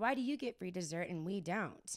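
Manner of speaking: normal talking voice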